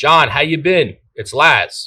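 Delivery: loud, forceful, commanding, take-charge delivery. Demonstrating how to open a phone call with a customer: loud and commanding. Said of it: "I'm being very loud and very commanding".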